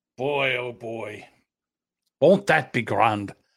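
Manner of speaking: put-on Irish accent. Mocking the promised haircut reward to the other speaker, in an Irish accent. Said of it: "I don't know why I'm doing an Irish accent".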